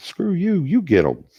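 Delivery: sassy dog voice, high.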